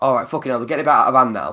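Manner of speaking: ordinary talk, nothing marked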